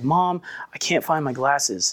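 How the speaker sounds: slow, mildly whiny, beaten-down, defeated voice. Retelling how a daughter complains to her mom: imitating a defeated, whiny voice. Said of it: "kind of like defeated, kind of whiny".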